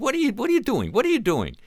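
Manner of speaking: very high, loud, exasperated, impatient swooping nagging. Retelling a father questioning his son's jacket: imitating Mickey Rooney impatient. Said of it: "impatient with this".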